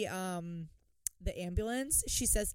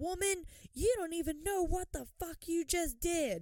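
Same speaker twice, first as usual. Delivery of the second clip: woman yelling, high-pitched outburst; 8 semitones higher, 4 dB quieter than usual. Telling the story, the speaker acts out Sharon yelling; imitating Sharon yelling. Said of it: "Sharon starts yelling about the U-Haul".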